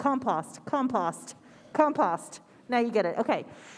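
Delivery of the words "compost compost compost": compost said with British pronunciation. Talking about home compost, saying the word compost in a british accent. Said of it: "I have to say it with a British accent".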